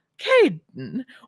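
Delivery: slow, stretched-out, swooping sing-song British accent. Showing how the character Esme speaks: Esme voice, British accent. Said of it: "I can't do a British accent".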